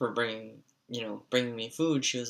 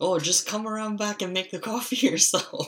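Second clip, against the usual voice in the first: put-on shrill scolding yell, very high and loud; 9 semitones higher, 4 dB louder than usual. Retelling how the speaker's grandmother yelled at them and their dad, imitating a yelling grandmother. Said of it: "she's just yelling at us".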